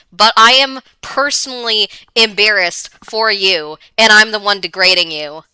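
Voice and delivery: ordinary talk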